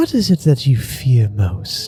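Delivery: gentle and soft. Asking the other person a question to get to know them, speaking more softly. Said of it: "kind of more softly".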